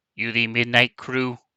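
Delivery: robotic, synthetic machine translator-program voice. Narrating a scene, voicing a comm unit's translator program, robotic voice. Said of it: "it is a robotic voice".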